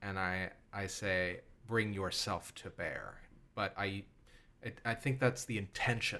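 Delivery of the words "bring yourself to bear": steady, cool, composed and calm delivery. Answering how the character speaks a magic command: cool, calm command. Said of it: "I say it very coolly and very calmly".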